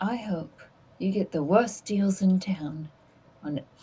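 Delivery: quiet muttering under breath. Asked what he mutters to give another player unsettling words, muttered under breath. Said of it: "What do you mutter?".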